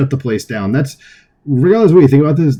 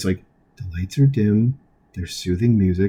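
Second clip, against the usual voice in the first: soft, calm public-radio narrator voice; 5 semitones lower, 8 dB quieter than usual. Describing an NPR narrator's calm appraisal in a clip: NPR radio voice. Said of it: "in like that radio voice".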